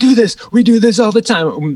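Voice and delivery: acted, high, all-out screaming outburst. Recalling a show where the band's drummer suddenly stood up, retelling a scream. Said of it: "starts screaming".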